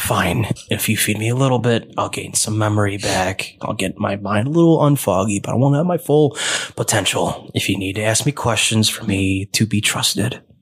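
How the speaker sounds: voice of a strange creature. Voicing a creature bargaining with the players: voicing the creature. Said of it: "It goes".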